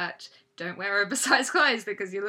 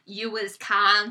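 put-on thick country accent; 5 dB louder than usual. Retelling the words of a recording that moved the speaker, in a thick country accent. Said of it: "this thick country accent comes on".

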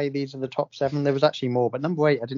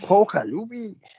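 attempted, put-on Scottish accent, higher pitch; 6 semitones higher than usual. Quiz host reading a clue name aloud in an attempted scottish accent. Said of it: "really nailing Scottish".

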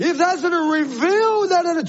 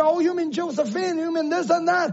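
ordinary talk, nothing marked

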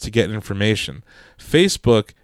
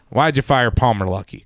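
fake Texan politician voice. Imitating a politician who talks like this: Ted Cruz impression. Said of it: "Talks like this".

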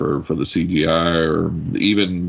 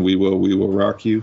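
plain

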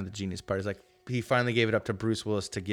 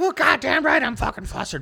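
mock, very high-pitched, shrill, furious rant; 7 dB louder than usual. Retelling a movie scene where Ted has been pissed off: imitating an angry outburst. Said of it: "spitting shit out".

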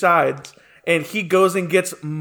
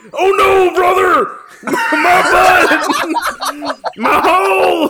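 agonized scream, very high and very slow; 13 semitones higher, 4 dB louder than usual. Voicing a dwarf on the ground after a failed lift: screaming in pain. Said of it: "on the ground screaming".

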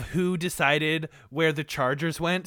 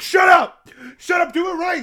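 very high, shrill, bossy yelling; 12 semitones higher, 4 dB louder than usual. Mocking the directors' notes: imitating the directors yelling. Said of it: "the voice of my directors over here".

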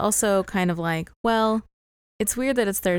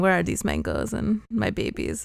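rough, rasping, creaky character voice. Retelling how someone went around after watching the show: Helena voice. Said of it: "And speaking like Helena".

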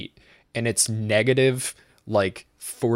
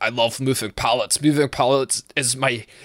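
put-on Russian accent slipping into Scottish; 2 semitones higher than usual. Imitating the weirdest man he ever met, accidentally in a scottish accent. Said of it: "sorry, that's Scottish".

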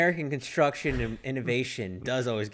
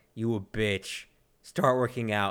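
put-on stoic, flat, deadpan Russian accent; 2 semitones lower than usual. Describing the Russian video made in retaliation, stoic Russian voice. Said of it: "it's like a stoic Russian voice".

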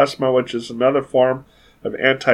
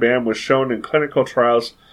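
ordinary delivery

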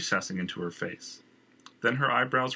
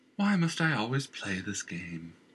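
put-on tired, weary, sighing, older-sounding voice. A girl tending a horse, sighing, sounding older. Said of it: "The girl sighed, the sweetness and youth slipping from her voice, sounding much older".

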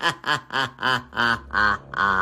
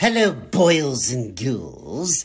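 put-on cackling ghoul host voice, higher; 4 semitones higher, 3 dB louder than usual. Greeting Halloween podcast listeners: Crypt Keeper voice. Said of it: "the voice of the Crypt Keeper".

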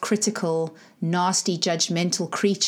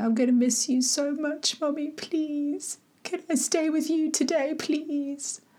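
mock crying child voice, very high and tearful; 9 semitones higher than usual. Retelling his plea on the way to school, imitating a child crying. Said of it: "And he just kept crying".

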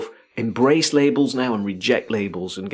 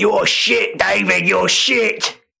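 very high, rough, drawn-out jeering heckler's yell; 10 semitones higher, 4 dB louder than usual. Describing someone in the stand yelling at a player, imitating a fan shouting. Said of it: "he's shouting".

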